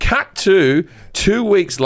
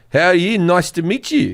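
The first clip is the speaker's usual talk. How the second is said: put-on South African accent. Retelling how a stranger at a bar greeted him: imitating a South African accent. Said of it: "South Africans, how they talk".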